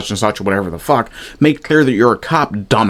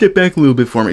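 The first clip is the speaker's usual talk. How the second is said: put-on, meek, timid, sarcastic mocking voice; 4 semitones higher than usual. Mocking a police officer's request by repeating it: mocking imitation of an unassertive officer. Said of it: "could you be any more assertive, sir?".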